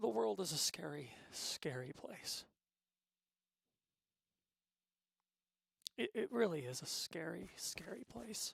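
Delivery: moved, emotional, heartfelt delivery. Speaker admitting they have gotten emotional and philosophical, emotional. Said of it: "I didn't mean to get this emotional".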